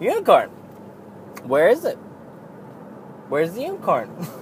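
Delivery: put-on whispered, breathy, childlike little girl voice. Recalling what she would say, in her voice: imitating a young girl's voice. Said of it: "something in her voice again. She'd be like".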